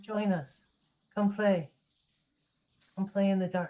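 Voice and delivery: hushed whispered voice. Storyteller voicing an unseen voice that answers the player, in a whispering voice. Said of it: "you hear a voice whisper back at you".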